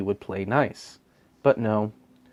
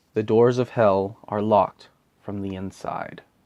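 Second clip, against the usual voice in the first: ordinary talk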